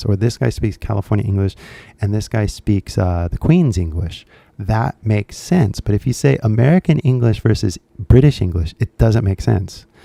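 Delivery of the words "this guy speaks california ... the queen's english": normal talking voice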